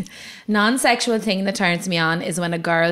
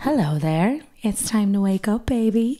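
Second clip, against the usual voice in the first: put-on seductive, sultry voice; 3 semitones higher than usual. Recording a joke morning alarm on request: mock seductive wake-up call. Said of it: "give me a morning alarm".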